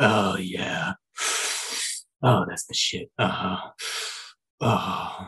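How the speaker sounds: slow, breathy, creepy leering whisper. Acting out someone smoking and watching her through the window: imitating a creepy leering watcher. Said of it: "creeping on her".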